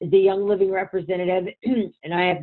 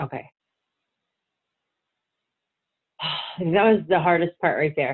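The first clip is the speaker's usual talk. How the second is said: fighting off crying, swallowing tears, pushing through; 2 semitones lower than usual. Speaking during a conversation about healing, holding back tears. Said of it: "I was trying not to cry".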